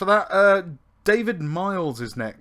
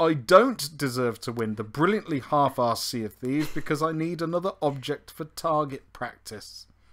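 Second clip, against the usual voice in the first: usual speaking voice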